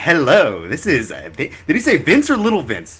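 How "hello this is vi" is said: mock radio announcer delivery. Retelling how a voice memo sounded: imitating Little Vince's radio-clip voice. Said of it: "I love the way he did his voice".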